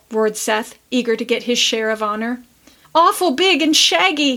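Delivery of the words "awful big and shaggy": high, trembling, wavering, quavering voice. Roxy, clinging to Tilly, joins the others' account, quavering. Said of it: "quavered Roxy".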